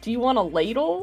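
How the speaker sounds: mock sarcastic tone. Retelling what the partner asked on finding a ladle: imitating a sarcastic question.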